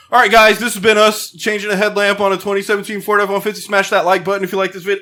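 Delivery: online video host patter, vlogger style. Retelling the end of a how-to video: imitating a YouTuber outro. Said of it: "And he's like".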